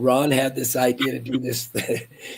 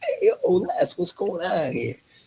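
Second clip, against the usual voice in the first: put-on sing-song Italian accent, high and swooping; 7 semitones higher than usual. Retelling staying in character at a dress-up event, doing an Italian accent as Tony. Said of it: "doing my Italian oh, Italian thing".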